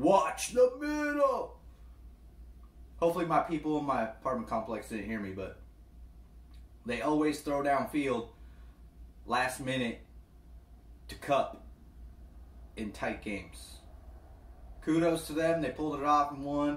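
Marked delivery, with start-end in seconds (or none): 0.0-1.6 high, slow, drawn-out yell. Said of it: "I literally was yelling at the T V".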